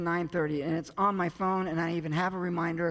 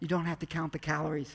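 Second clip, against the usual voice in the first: usual speaking voice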